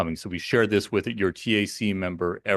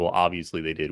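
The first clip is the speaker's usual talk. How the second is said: ordinary talk, nothing marked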